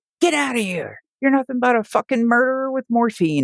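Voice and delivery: mock very high, enraged, furious screaming. Retelling a patient's son confronting a hospice worker: imitating someone screaming angrily. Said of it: "and just screamed in my face".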